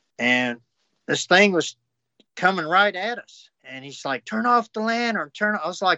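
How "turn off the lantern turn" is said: high, frantic, panicked, scared urging. Retelling Mike's words as a creature came at them: imitating Mike panicking. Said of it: "He was panicking".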